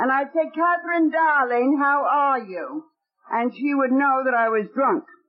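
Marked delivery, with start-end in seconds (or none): 0.5-2.8 fake English accent over tipsy speech. Retelling greeting someone while drinking, in a put-on English accent. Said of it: "I'd use an English accent".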